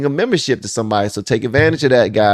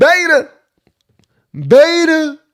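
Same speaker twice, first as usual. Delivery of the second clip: exaggerated very high twang with "beta" stretched out; 4 dB louder than usual. Trying to copy how a man says a word: twangy voice. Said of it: "Got to put a little twang in your voice".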